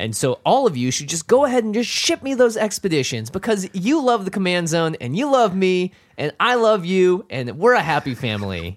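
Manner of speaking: high, geeky, nerdy put-on voice. Speaker addresses the audience, mimicking how people in media speak: nerd voice. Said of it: "Now try it without the nerd voice".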